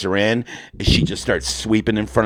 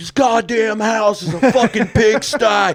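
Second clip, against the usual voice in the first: mock yelling, higher; 12 semitones higher, 4 dB louder than usual. Acting out a made-up movie trailer, a husband yelling at his wife: acting out a husband yelling. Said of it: "her husband's yelling at her".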